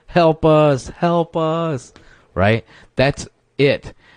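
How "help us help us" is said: acted very high, very slow, loud wailing cry. Retelling a wounded man calling to the cops: imitating someone screaming for help. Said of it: "He's screaming at the cops".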